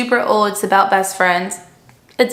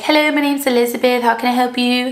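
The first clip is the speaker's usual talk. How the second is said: fake, fancy, put-on British accent; 2 semitones higher than usual. Retelling talking at work while pretending to be British: put-on British accent. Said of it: "I like to pretend I'm British".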